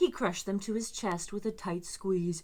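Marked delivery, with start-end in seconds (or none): none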